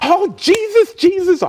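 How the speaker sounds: shrill, very loud, high wailing. Retelling a woman's reaction on learning he was the saved baby, retelling a Holy Ghost meltdown. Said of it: "she went into a Holy Ghost meltdown".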